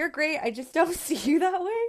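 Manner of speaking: laughing mock disappointment.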